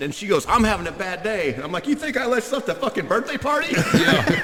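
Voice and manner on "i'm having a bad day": distressed, upset, downcast delivery. Retelling what an upset woman said after the car door mishap, mock-upset. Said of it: "She was pretty upset".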